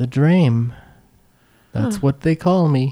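character voice of a talking tree. In an improvised scene, a performer playing a tree answers, in a talking tree voice. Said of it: "I'm just doing the same voice".

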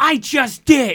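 put-on indignant, put-out, upset voice, high and loud. Retelling an older coworker's reply when told to blow her nose: imitating someone upset. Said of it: "she'll get upset with me".

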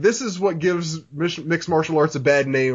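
ordinary talk

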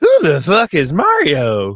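very slow, loud, high, sing-song, swooping, drawn-out. Waiting for a caller to connect, doing a Jargo impression. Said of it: "that was my Jargo impression".

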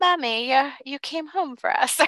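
put-on eerie, high-pitched ghostly child voice. Retelling a scene, the speaker voices the drowned children calling their mother, imitating creepy children. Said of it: "They creepily go".

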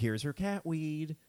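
slow, petulant, deliberately annoying voice. Retelling what a friend said about the cat: imitating Cupid, petulant and annoying. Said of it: "I'm doing a bit a little bit".

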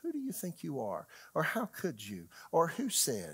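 play-acted, swooping, accusatory, blaming tone. Illustrating how the devil's thoughts sound, in a mock-accusing devil voice. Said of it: "he usually has an accusing voice".

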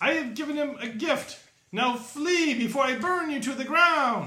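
shrill, very high, loud yell. Voicing a character answering the party's request for answers, shouting. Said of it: "And he shouts".

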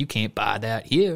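put-on German-accented English. Acting out store staff turning a woman away, in a put-on accent. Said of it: "That accent that you just had was the best one".

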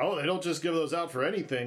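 ordinary delivery

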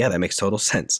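normal talking voice

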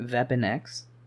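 put-on German accent. Chatting with another speaker about a story, repeating a phrase in a German accent. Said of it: "That's my German impression".

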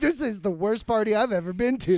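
ordinary talk

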